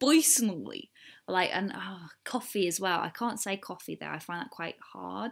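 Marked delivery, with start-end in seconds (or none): 0.0-0.9 attempted New Jersey accent on the word "personally". Showing a favourite word in an attempted american accent: attempted new jersey accent. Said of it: "this is more of a New Jersey accent".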